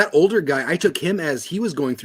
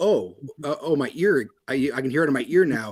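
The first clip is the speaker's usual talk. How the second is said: ordinary talk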